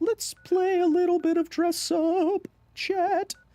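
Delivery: very high, playful dress-up voice.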